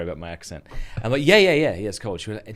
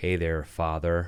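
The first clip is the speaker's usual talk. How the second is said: fake, put-on American accent; 5 semitones lower, 4 dB quieter than usual. An Australian recalls faking an accent while gaming online: put-on American accent. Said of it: "I've put on an American accent".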